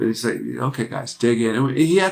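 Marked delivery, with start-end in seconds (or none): 0.6-1.6 mild, kindly, gentle, encouraging voice. Imitating Mike telling the band through headphones to dig in: imitating Mike's gentle voice. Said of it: "this kind of voice and a way about him, very gentle".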